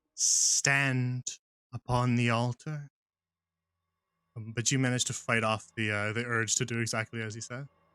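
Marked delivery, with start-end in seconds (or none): 0.2-2.9 very slow, echoey, echoing voice. Voicing a figure who commands a player through an echoing voice in your head. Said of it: "his voice kind of echoes in your head".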